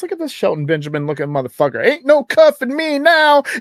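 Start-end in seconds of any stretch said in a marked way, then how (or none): 1.8-3.4 loud, pitched way up. Retelling what a friend said near a police officer: imitating someone saying it loud. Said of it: "and he said it kinda loud".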